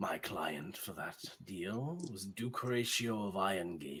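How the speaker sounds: fiendish put-on voice. The fiend patron answers its new warlock's question about a deal, fiend patron voice. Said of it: "My warlock. Rise for your patron. I rise. Here in this room, reborn, is [name], Warlock of the Fiend. / as that she crushes it and that circle rises, / So a deal is a deal after all".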